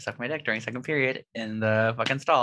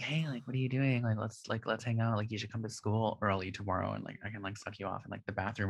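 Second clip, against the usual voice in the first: hushed, quieter whispering voice; 8 dB quieter than usual. Retelling a message from another kid at school: whispering. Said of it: "I'm, like, whispering".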